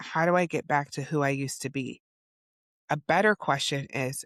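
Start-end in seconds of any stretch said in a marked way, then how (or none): none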